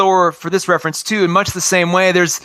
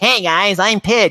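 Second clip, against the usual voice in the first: whiny cartoon-character voice, drawn out. Describing a character from the original series: Pidge's high whiny voice. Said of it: "had like a really high whiny voice".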